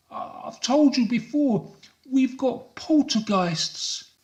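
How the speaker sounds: very high, quavering, trembling, frightened and insistent voice. Narrator reading a man's reply after the mirror breaks, trembling. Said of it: "She sees the man trembling on his knees, / I must be having another of my dizzy spells, he suspects. As the mirror cascades to the floor, the man sees first the reflection of the outline of his chin".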